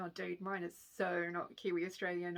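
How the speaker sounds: ordinary talk, nothing marked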